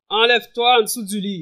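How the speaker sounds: very loud, great big, booming, commanding voice. Speaker recounting what a radio announcer said to him, in a great big voice. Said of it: "Et dans une grosse voix".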